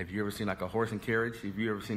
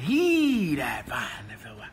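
heavy stress on the word "He"; 3 semitones higher, 7 dB louder than usual. Quoting scripture about finding a wife: stress on He. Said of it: "you got to put the emphasis on the pronoun".

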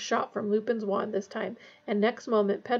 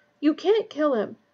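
breathless, out of breath, much higher pitch; 6 semitones higher, 3 dB louder than usual. A narrator reads a character's line, spoken while facing raised wands: breathlessly. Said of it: "he said breathlessly".

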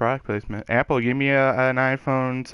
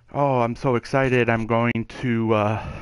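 usual speaking voice

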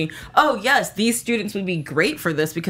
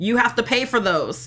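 play-acted, half-screamed, mild scream, pitched up; 5 semitones higher than usual. Speaker retells a man reacting as a woman heads to the cash register, retelling a scream. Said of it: "he's already screaming".

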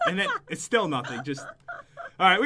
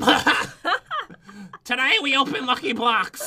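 put-on slow, laughing, old woman voice. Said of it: "she sounds like a grandma".

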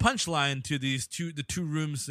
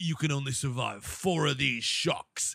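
put-on villain voice. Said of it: "my voice for Idris Elba and Jason Statham, same voice".

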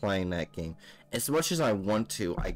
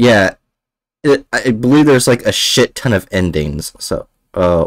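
booming voice, much too loud. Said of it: "am I really loud on stream".

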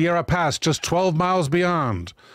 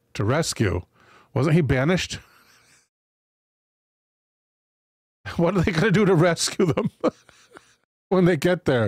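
words spoken through giggles and laughter. Reading a history aloud and stopping to question it, laughing while talking. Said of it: "Sorry, I'm laughing".

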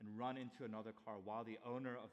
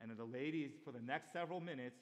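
ordinary delivery

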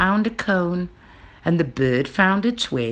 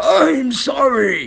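sputtering, stumbling, spluttering, pitched up and loud; 6 semitones higher, 5 dB louder than usual. A dragon draws back and speaks: spluttering. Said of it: "he spluttered".

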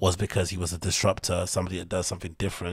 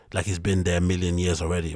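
plain

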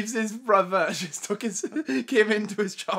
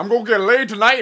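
very loud, raised voice; 10 dB louder than usual. Joking about a photo of a giant finger: Jack Morris voice. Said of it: "that's now Jack Morris's voice".

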